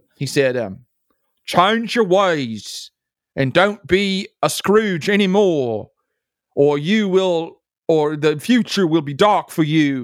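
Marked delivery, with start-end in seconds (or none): 1.5-10.1 slow, drawn-out, attempted British accent. Retelling what a British man in his mind told him, in a put-on British accent. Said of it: "let me see if I can do my British accent".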